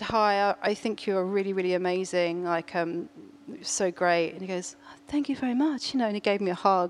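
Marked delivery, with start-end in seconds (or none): none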